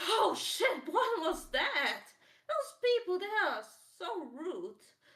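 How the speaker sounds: play-acted very high, swooping, frightened outburst. Describing someone barely getting away, acting out running scared. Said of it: "running afraid and being like".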